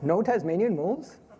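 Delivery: put-on Swedish accent. Asking the question aloud, in a put-on swedish accent. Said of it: "I'll say this in a sort of Swedish tone".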